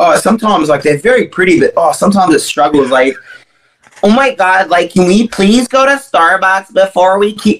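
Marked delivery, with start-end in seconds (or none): 4.0-7.6 put-on annoying, basic American girl voice and accent. Mocking how American girls talk, in an American girl impression. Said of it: "I can do, like, the American girls".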